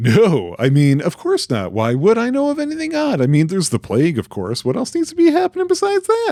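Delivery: high, agitated, increasingly worked-up rising voice. Denying knowing anything odd when asked about rumors: voice rising high, agitated. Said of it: "Why is your voice getting so high? You seem agitated".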